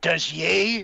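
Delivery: put-on broad, thick Central Arkansas accent. Retelling how Sarah answered, imitating Sarah's thick accent. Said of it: "in her also thick accent".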